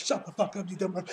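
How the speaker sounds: plain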